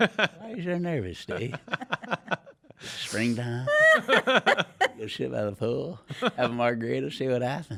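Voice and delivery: slow, unhurried sing-song drawl, every word stretched, swooping. Teasing Steve about being nervous: Matthew McConaughey impression. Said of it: "it's a great impression".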